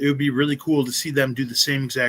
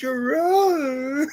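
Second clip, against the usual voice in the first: imitated squeaky high cry, higher pitch; 13 semitones higher than usual. Retelling a funny movie scene to a friend: imitating a high-pitched cry. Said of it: "where he goes high pitch".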